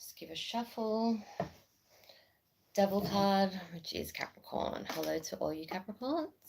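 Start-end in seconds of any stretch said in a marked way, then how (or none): 4.9-6.3 voice climbing higher, pitched up throughout. Doing a card reading and greeting the Capricorns, voice going up. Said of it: "My voice went up then".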